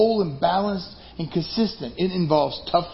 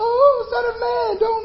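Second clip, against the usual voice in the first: very high, panicked yell in a demon voice. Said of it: "And they yell out".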